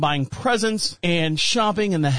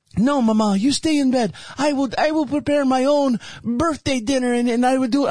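high-pitched, put-on Italian accent; 7 semitones higher than usual. Acting out their younger self telling Mama to stay in bed, in an unexplained Italian accent. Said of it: "I don't know why I sound Italian".

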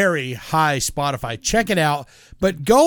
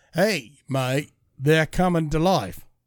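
put-on British accent, much quieter; 4 dB quieter than usual. Acting out Sam Neill's line from a movie, in a Sam Neill British-accent impression. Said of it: "British accent".

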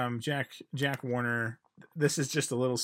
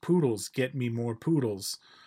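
put-on heavy Hungarian accent. Retelling a director asking the art director for poodles: Michael Curtiz impression. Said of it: "had a very thick Hungarian accent".

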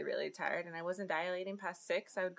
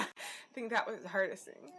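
teary voice, fighting off crying. Recalling the hardest moment of a long labor, holding back tears.

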